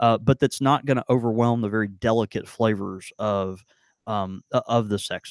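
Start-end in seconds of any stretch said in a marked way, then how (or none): none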